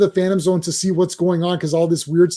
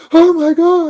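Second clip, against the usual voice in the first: put-on very high, shrill, aghast old-lady cry; 11 semitones higher, 7 dB louder than usual. Joking about a racy costume, imitating an old Smallville woman walking by, mock-shocked. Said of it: "like old Smallville woman is walking by".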